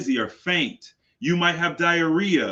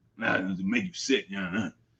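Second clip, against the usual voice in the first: put-on very low, grumpy old man grumble and mutter; 9 semitones lower, 7 dB quieter than usual. Retelling a grandfather grumbling about the remote: imitating a grumpy grandpa. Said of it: "just grumpy".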